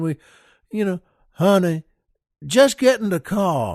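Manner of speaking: put-on Cajun accent with "car" drawn out. Retelling how a woman was fetched for a party, the speaker quotes one of them in a cajun accent. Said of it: "says to her in that great Cajun".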